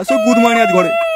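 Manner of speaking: put-on old man voice.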